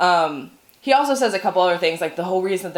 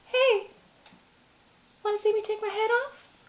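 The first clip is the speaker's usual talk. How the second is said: squeaky voice, way up high; 6 dB quieter than usual. Retelling a scene with an attempted impression: Mickey Mouse voice. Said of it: "in the Mickey Mouse voice, which I'm not, I don't can't do a very good impression of. But I'm going to try".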